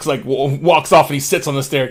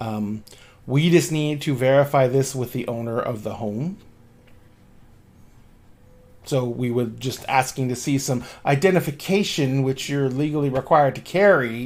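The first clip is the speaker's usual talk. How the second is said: plain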